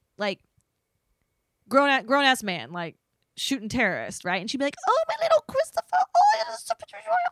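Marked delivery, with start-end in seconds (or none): 4.9-7.2 put-on doting baby talk, much higher pitch. Retelling how an ex's mom babied her grown son: mock doting baby talk. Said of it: "my ex's mom babied him all the time".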